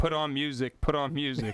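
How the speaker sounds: ordinary talk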